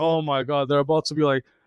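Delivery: ordinary delivery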